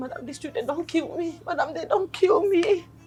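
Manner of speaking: weepy, tearful, sobbing voice. In a drama, someone sobs to her madam about the children, crying. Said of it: "stop crying".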